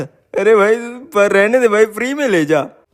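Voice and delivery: put-on voice, pitched high, naive-sounding.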